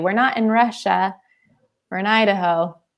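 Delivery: ordinary delivery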